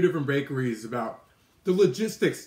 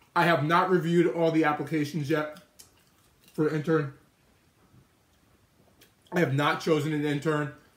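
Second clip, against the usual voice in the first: talking with mouth full of food. Answering a question on a stream while eating, talking with mouth full. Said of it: "talking with my mouth full".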